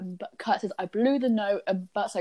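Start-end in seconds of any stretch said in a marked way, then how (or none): none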